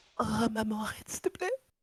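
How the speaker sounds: high, loud, wailing mock sobs in child voice.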